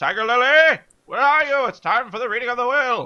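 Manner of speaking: very high, shrill yell from the top of the lungs. Calling a missing party member in character: yelling at the top of lungs. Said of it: "I yell at the top of my lungs".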